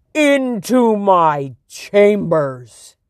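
loud, roaring bellow. A narrator voices the king after his servants laugh at him, roaring. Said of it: "he roared".

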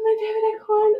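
play-acted, very high, pleading, begging tone. Retelling holding on to him during transition, imitating begging. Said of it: "I'm like begging him".

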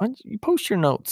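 acted-out, very high-pitched teasing tone. Recounting teasing a man who took notes at a clinic, retelling own teasing question. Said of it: "and I was teasing him".

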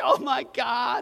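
high, frightened, panicked freaking-out voice. Retelling own reaction to the mom's words: imitating own panicked freak-out. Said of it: "freaking out".

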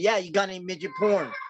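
put-on loud speech. Retelling a question to a store clerk: imitating saying it loud. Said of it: "And I said it loud where she could hear me".

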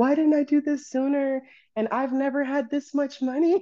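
very high, weepy, sobbing words. Retelling crying at home after a big first day: retelling own sobbing.

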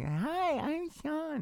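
tiny, goofy, very high-pitched voice. Recalling how Sean talked before his voice got deep: Sean's old little goofy voice. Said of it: "He used to have a little goofy voice".

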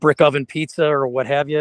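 plain

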